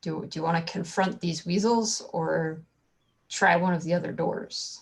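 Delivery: secretive, soft, hushed half-whisper. A player, not wanting the enemies to hear, asks the princesses: half-whisper. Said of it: "so I whisper to their princesses".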